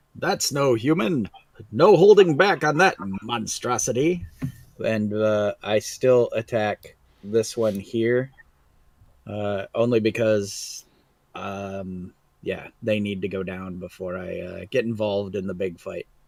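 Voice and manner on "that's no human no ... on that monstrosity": calling out in a high, carrying voice. Voicing a character who calls out on seeing a monster: calling out. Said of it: "I'll call out".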